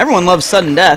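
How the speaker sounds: sarcastic, with faked enthusiasm and dry cheer. Reacting to news that a rule still exists, sarcastic. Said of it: "There's no sarcasm in my voice right now".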